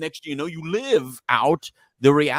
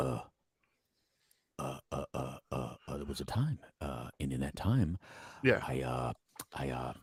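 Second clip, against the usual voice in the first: put-on slow, slurring serious voice, lower and quieter; 13 semitones lower, 14 dB quieter than usual. Imitating Johnny Depp's slow, slurring speech: slow slurring Johnny Depp impression. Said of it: "he's so serious sounding".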